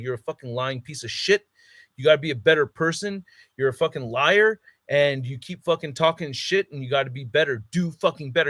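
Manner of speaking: put-on ferocious tone, not yelling. Kneeling in front of him, the speaker retells a ferocious telling-off. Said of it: "I'm fucking telling him like ferocious".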